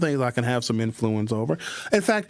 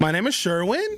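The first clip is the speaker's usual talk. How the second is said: "Sherwin" lifted with rising, question-like tone; 6 semitones higher than usual. Showing a name statement where the tonality goes up: pitch rises on sherwin. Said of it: "when the tonality goes up".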